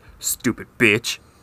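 mock muttering under the breath. Acting out someone walking away after hearing something, mock muttering under breath. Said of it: "walks away and then mutters under their breath".

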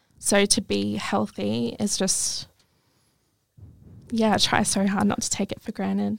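teary, slow voice welling up with tears. Speaker opening up, then apologizing, getting teary. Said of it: "I'm getting teary".

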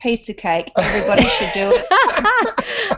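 high, laughing, sarcastic tone. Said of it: "I'm detecting a hint of sarcasm".

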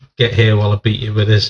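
ordinary delivery

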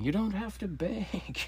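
very high, slow, drawn-out shouting. Retelling how a man answered a burning question, retelling a yell. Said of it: "he started yelling".

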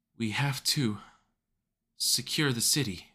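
put-on almost slurred, half-asleep. A character speaks in the middle of a fight, words almost slurred, drowsy. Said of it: "Her words sounded almost slurred, like she'd become drowsy".

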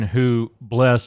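plain

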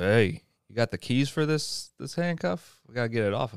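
ordinary talk, nothing marked

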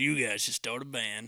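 put-on voice of a heavy smoker. Retelling what a producer said while recording songs: imitating Gary's smoker's voice. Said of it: "talk like that 'cause Gary smokes about two packs".

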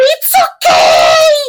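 very high, loud shout with swooping pitch. Retelling what she shouted back at a man: retelling a shout. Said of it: "E gritando assim".

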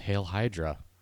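hushed half-whisper, under the breath. Retelling an actor's outtake line from a film script: imitating a half-whisper. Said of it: "he just sort of whispers".

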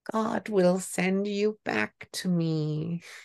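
tiny, eerie, creepy voice, drawn out very slowly. Imagining her speaking like something from a horror film, in a small, creepy voice. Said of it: "in this small, creepy voice".

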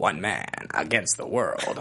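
whispered narration in 1980s movie trailer style. Showing listeners how an 80s trailer would say a tagline, 80s movie trailer voice. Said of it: "the 80s trailer voice would be".

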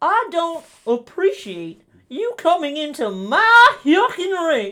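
silly cartoon voice, very high, loud, swooping. Doing the voice prompt Goofy against The Undertaker: Goofy voice.

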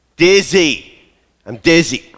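patronizing tone. Retelling a frustrated patient repeating herself to the doctor, retelling louder, patronizing repetition. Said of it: "louder and more patronizing".

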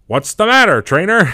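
shrill, booming announcer voice, very high and loud. Retelling what the battle announcer would say when you didn't move: imitating the game announcer. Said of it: "the announcer would go".

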